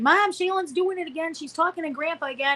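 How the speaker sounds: high, tearful, crying voice. Retelling siblings running downstairs to Mom: imitating siblings crying. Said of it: "they'd be crying".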